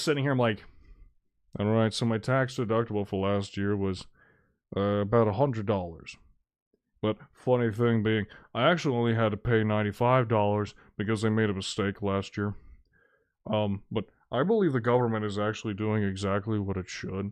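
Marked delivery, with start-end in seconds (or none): 1.6-17.3 deliberately dull, boring delivery. Showing how a boring talk about taxes would sound: deliberately boring voice. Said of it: "if I was talking like that".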